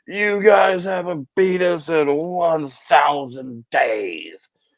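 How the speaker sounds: high, drawn-out yell over the shoulder. Retelling a guy being thrown out who shouts back while leaving, retelling a yell. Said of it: "he's like yelling on the way out".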